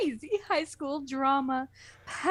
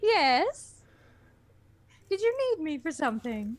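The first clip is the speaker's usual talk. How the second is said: motherly, matronly voice. Called back to be asked to read a part, answering in a motherly voice. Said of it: "you have a very motherly kind of voice".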